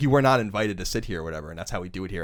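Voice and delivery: rude, curt tone. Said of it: "rudely or whatever".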